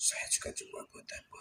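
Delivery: faint, soft, whispered spirit voice.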